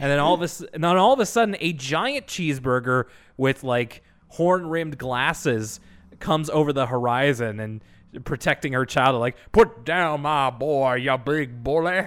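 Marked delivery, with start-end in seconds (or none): 9.5-12.1 slow, put-on southern drawl. Retelling a cartoon where a mother cheeseburger protects her child: put-on southern drawl. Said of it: "this southern drawl".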